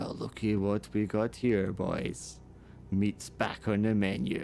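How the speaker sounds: snarling, menacing, threatening orc-like monster voice. Voicing an orc who surrounds the party with a snarl: snarling orc voice. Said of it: "a wall of orcs ... with a snarl".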